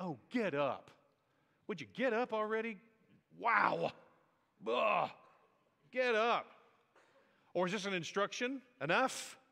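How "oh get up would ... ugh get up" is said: slow, drawn-out, fed-up, annoyed, irritated exasperation. Speaker acts out God's first two words to a man, imitating God irritated. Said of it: "God's irritated".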